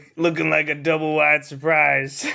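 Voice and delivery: deep, gravelly put-on voice. Quoting a line in the favorite voice: imitating a low gravelly voice. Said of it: "the low, gravelly voice".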